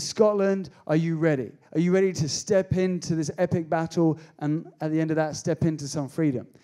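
ordinary talk, nothing marked

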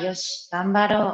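normal talking voice

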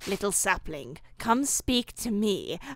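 put-on whispering spirit voice. Voicing a game character who calls the player over: whispering as the Moss Man. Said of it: "Moss Man whispers to you".

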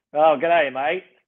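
aussie-accented speech. Asked on the spot for the classic greeting, the speaker delivers it in an Australian accent. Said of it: "Give us like a g'day, mate".

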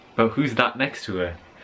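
ordinary talk

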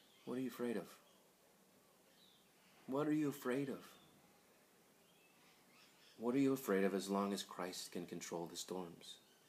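whispered delivery. Retelling what he said to them once the storm calmed, retelling a whisper. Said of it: "And he whispers to them".

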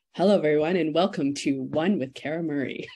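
on-air radio host announcer delivery. Asked for a taste of the radio voice from pre-recorded shows: radio voice. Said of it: "so I was able to redo my radio voice over and over. I'd be like".

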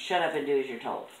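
plain

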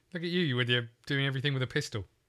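ordinary talk, nothing marked

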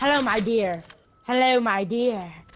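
put-on creepy old man voice. Retelling how a man greeted them, imitating a creepy old man. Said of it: "he sounds like a creepy old man".

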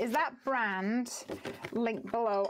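ordinary delivery

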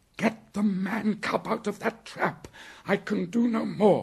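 breathless gasp at very high pitch. Reading a story aloud, a character calls to a companion, gasped. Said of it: "Bagheera gasped".

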